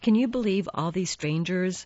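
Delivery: ordinary delivery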